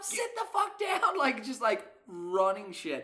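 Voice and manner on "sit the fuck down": acted screaming, higher and louder. Retelling a bar fight where a bartender on the bar is screaming: imitating a bartender screaming. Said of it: "is screaming at everybody".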